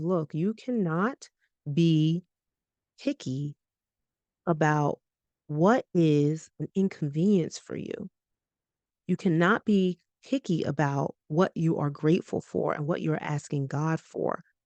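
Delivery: ordinary delivery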